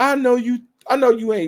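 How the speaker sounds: high, loud calling out. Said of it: "Nero was like".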